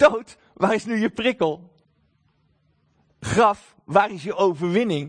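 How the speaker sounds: defiant, daring, challenging, provoking tone. Quoting the verse addressing death and the grave, in a challenging, defiant tone. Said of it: "Daar zit eigenlijk een soort van een uitdagende klank zit daarin, hè? Zo van".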